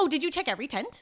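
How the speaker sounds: high, pointed, passive-aggressive tone. Retelling what you said to her, mock passive-aggressive. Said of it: "my passive aggressive".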